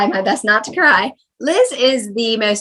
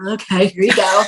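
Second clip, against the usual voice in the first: mock grudging, reluctant tone; 2 semitones lower than usual. Describing a generous friend, contrasting with a grudging handover: imitating grudging giving. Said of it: "willingly, happily, not like".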